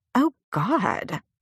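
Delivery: revolted, appalled, high outcry of disgust. Laurie hears that a woman sleeps in her car: appalled. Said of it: "Laurie was appalled. Revolted".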